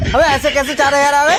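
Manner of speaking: shouting, yelling. Asking how four thousand arrived instead of four hundred: shouting. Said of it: "अरे क्यों चीखे जा रहे हो?".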